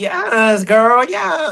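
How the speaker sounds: put-on girly, feminine online-personality voice. Describing a man's online persona, imitating his feminine internet persona. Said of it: "he be like".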